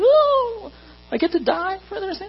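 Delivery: very high, overeager, eager whooping cheer. Mocking the impression of Jesus running to the cross: mock-eager Jesus. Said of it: "of Jesus just running to the cross".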